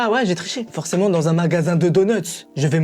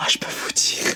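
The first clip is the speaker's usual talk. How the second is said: hushed, quieter whisper. Talking to the viewers of a video about a jar, whispering. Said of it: "Pourquoi je chuchote encore?".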